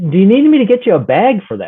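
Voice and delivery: play-acted swooping, high hollered yell. Retelling what they yelled out the window about their lawn, retelling a yell. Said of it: "I had to yell out the window".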